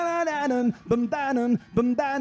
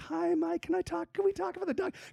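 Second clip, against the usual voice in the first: high, soft, polite voice. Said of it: "she's like".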